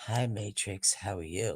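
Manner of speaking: very low, slow, sultry seductive tone. Retelling how the two greeted each other: imitating Gutters' sexy voice. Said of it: "were practicing their sexy voices".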